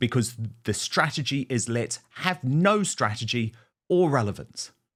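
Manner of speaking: ordinary talk, nothing marked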